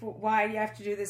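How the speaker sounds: ordinary talk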